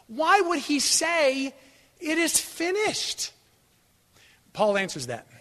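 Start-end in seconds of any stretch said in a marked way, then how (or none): 0.2-3.3 high, slow, baffled, wondering tone. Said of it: "you're gonna walk away going".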